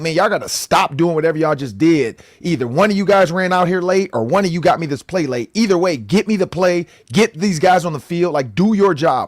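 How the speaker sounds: angry scolding yell. Retelling how he looked over at the sideline: imitating J J McCarthy yelling. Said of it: "He's, like, yelling".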